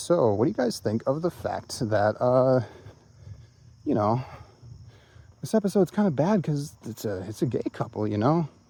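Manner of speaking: coy, innocent-sounding, leading tone. Retelling a question asked after viewing an episode: imitating Mahler coyly. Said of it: "Mahler kinda coyly goes".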